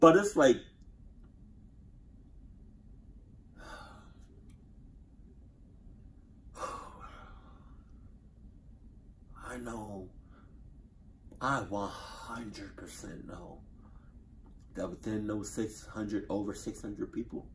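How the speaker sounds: tearing up, emotional. Speaking about the over six hundred people who died, the speaker is tearing up. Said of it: "the reason I'm I'm tearing up".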